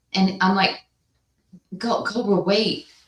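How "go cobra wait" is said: acted huffing and puffing, out of breath, higher. Retelling calling to cobra uphill: imitating being out of breath. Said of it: "I am huffing and puffing".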